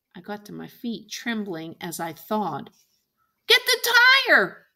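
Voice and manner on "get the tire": shrill, very loud, high-pitched hollering. Narrator reads Jim shouting to Scout after she freezes: hollered. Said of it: "Jim hollered".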